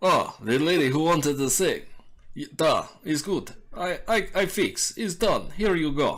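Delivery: put-on loud Russian accent. Game master voices Stanek answering Maris: Stanek's Russian accent. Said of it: "Russian, Russian, Russian, okay".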